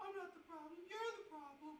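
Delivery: very high, squeaky little voice. Rewriting a number over and over, speaking in a Gingerbread Man voice from Shrek. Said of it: "That's my uh gingerbread man voice".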